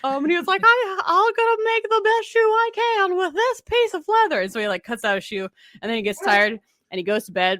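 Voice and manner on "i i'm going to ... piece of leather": very high, slow character voice. Retelling a shoemaker story, the narrator voices the shoemaker like the Shark Tale shrimp. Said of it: "he has a high set".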